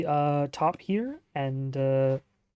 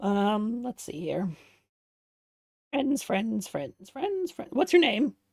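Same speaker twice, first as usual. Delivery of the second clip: high kobold creature voice; 6 semitones higher than usual. Voicing a copper kobold flipping through a book: voicing a copper kobold. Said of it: "he just opens it up and flips through a couple of pages and goes".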